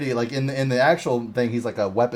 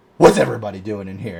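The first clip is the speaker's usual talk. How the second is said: put-on big dark voice, louder; 3 semitones lower, 4 dB louder than usual. Describing a man walking into a room, in a big dark voice. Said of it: "big old like dark voice".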